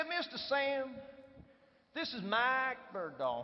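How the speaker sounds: put-on beautiful, gracious, full American South accent. Retelling how the COO introduced the speaker on arrival, in a southern US accent. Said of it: "with a beautiful southern accent".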